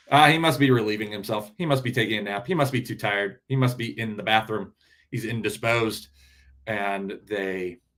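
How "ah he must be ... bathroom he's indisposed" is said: ordinary talk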